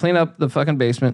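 ordinary talk

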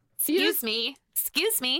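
put-on American accent. Trying out a short phrase in an american accent. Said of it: "think how to do excuse me in an American".

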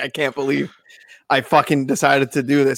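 put-on disgusted voice. Retelling what Kirk said on the podcast: imitating Kirk's disgust. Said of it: "hear the disgust in Kirk's voice".

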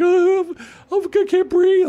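very high, tearful, drawn-out crying. Retelling how the ex was crying after a changed flight: imitating her crying. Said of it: "she's crying".

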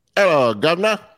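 bad put-on British accent, pitched high, drifting Jamaican. Prompted to have a go, a co-host attempts a bad British accent. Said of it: "it's more of a Jamaican accent when you do it".

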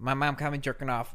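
put-on Chicago accent. In a game where everyone repeats the same line, using a put-on chicago accent. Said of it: "he's like making his own Chicago accent".

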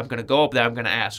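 ordinary delivery

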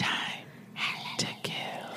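whispered, hissing serpent voice. Retelling the scene, giving the voice only Harry can hear: snakelike voice. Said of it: "Snake sounds".

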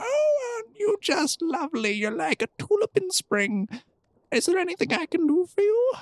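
put-on very high, frail little old woman voice. Playing a frail old lady greeting a visitor, frail old lady voice. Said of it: "this frail little old lady, kind of hunched over".

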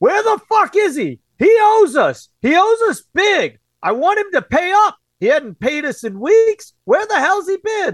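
put-on very high, swooping, muffled male screaming. Describing men behind a door looking for someone, imitating muffled screaming men. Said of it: "you hear the men screaming but quite muffled".

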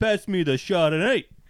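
put-on New York accent. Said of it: "insulting to New Yorkers".

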